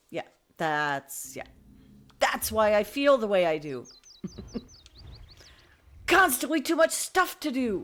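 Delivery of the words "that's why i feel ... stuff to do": raised, rising yell, come out unintentionally. Speaker listing a month full of auditions and jobs, yelling. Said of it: "Sorry, I'm yelling".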